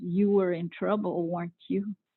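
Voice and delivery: low, quiet stage whisper. Recalling a man leaning down low to question the speaker: retelling a half-whisper. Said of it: "leans real low down to me and halfway whispers".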